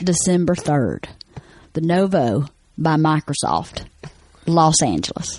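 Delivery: rural hillbilly way of talking. Reading out show dates and venues in the accent he grew up with: country hillbilly accent. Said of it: "this is how I grew up talking".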